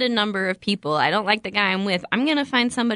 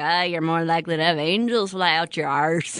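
Irish accent impression; 4 semitones lower than usual. Quoting a favorite movie line from the Irish friend character, Irish accent impression. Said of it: "the Irish guy".

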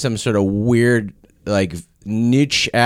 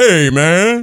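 put-on voice, raised and high-pitched; 7 semitones higher, 5 dB louder than usual.

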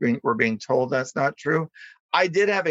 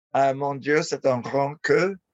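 plain

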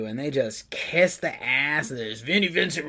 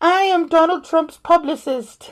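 put-on old lady voice, higher and louder; 7 dB louder than usual. Retelling a prank phone call made in a disguised voice: Mrs. Doubtfire voice. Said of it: "like Missus Doubtfire".

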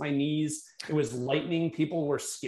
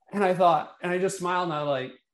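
ordinary delivery

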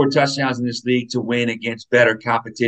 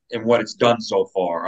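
usual speaking voice

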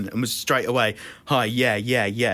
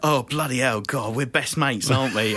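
mock overly chummy, best-mates tone. Retelling a comedian who talked to a stranger like an old friend: imitating someone acting like best mates. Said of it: "trying to talk to him like they were best mates".

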